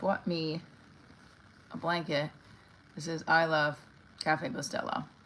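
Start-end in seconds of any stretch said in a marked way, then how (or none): none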